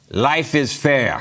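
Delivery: high fake Russian accent. Telling a joke, the speaker quotes the russian guy at the fair; russian accent. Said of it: "How about that for a Russian accent?".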